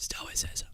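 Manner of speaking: whispering. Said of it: "I'm whispering for some reason".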